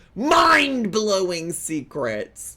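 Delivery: full-on loud yelling into the mic. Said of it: "I'm sorry for yelling in the microphone".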